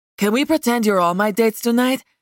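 plain

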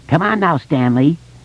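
squeaky, shrill, high granny falsetto. A boy teases his friend using one of his voices, a shrill falsetto. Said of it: "Richie said in a shrill falsetto".

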